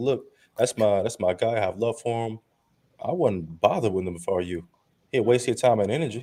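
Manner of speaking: plain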